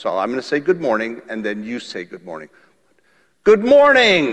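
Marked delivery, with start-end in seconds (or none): 3.4-4.3 big, loud, pitched-up outside voice, calling out. Leading a group in a repeat-after-me greeting, using a loud outside voice. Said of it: "We're going to use outside voices".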